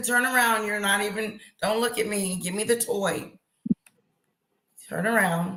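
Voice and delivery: ordinary talk, nothing marked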